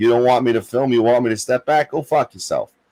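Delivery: ordinary delivery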